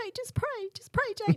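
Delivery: high, loud, tearful, crying voice.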